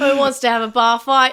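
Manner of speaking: loud put-on Australian accent. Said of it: "putting on Australian accent".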